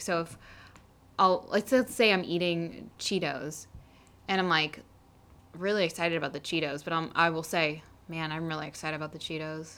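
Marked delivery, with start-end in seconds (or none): 8.1-9.8 totally expressionless, soft, flat deadpan. Giving a hypothetical example of their own way of speaking: really deadpan. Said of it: "I'll say it really deadpan".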